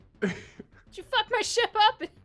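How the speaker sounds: put-on character voice. Voicing Lucky after a part flies across the ship: voicing Lucky. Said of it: "you hear Lucky go".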